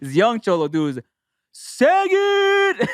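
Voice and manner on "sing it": higher, louder put-on child yell. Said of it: "one of the cholos yells out".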